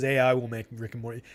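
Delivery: ordinary delivery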